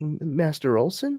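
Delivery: small, high, stammering little voice. Retelling a scene where a little voice calls out to an old man, small stuttering voice. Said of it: "a little voice kind of stutters".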